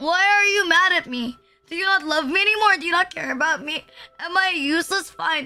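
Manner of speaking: acted, frantic, needy, panicked pleading. Acting out own reaction when someone is mad: imitating own panicked pleading. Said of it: "I panic and I'm like".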